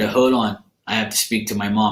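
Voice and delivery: ordinary talk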